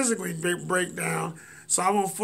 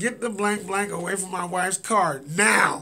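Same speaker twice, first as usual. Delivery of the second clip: ordinary delivery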